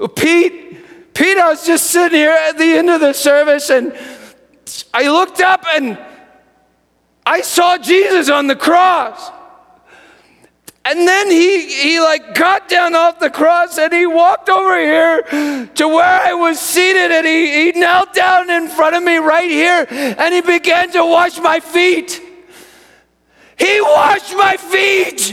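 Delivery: mock sobbing, trembling, very high and loud tearful outburst. Speaker retells what a man he offered to pray for told him, imitating someone crying and shaking. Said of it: "through his tears through his shaking".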